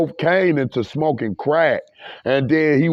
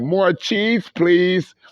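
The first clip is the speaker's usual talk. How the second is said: cheeky, sarcastic, wisecracking smart-aleck tone; 3 semitones higher than usual. Retelling own past remark at the store: imitating own sarcastic remark. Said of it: "a little sarcastic little wise motherfucker".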